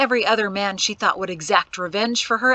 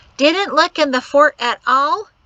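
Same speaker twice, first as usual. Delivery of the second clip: shrill, loud, mocking parody voice; 5 semitones higher, 5 dB louder than usual. In a story, a man on a porch mimics a woman blaming him, in a shrill mimicking voice. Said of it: "he mimicked in a shrill voice".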